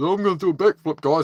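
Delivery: put-on goofy kid voice. Retelling what a kid at a skate park said: imitating a doofy kid. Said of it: "He's like this real doofy kind of kid".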